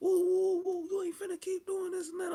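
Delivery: very high, shrill, taunting, woofing trash-talk voice. Retelling an argument face to face in a room: imitating own trash talk. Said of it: "I'm woofing at her".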